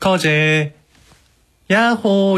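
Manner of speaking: odd, high, sing-song tone on "yaho".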